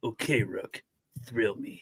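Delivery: very slow, gruff put-on voice, drawn out. Imagining a line said by someone else, in a Clint Eastwood voice. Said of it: "imagine him saying that in a Clint Eastwood voice".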